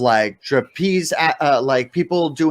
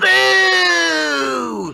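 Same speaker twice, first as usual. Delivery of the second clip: put-on jeering, booing old crone voice, pitched higher. Voicing an old hag in the crowd: old hag booing. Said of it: "there's an old hag that's standing".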